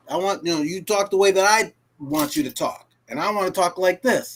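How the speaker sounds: ordinary delivery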